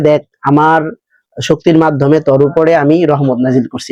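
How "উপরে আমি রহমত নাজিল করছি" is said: normal talking voice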